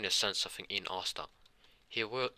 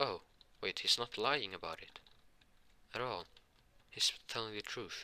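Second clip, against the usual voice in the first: ordinary delivery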